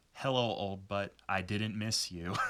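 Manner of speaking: sassiest girl-boss attitude, acted out. Retelling what Kiara said to her old body, imitating Kiara's sassy girl-boss voice. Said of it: "in the sassiest girl boss voice".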